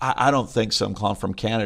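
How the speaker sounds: plain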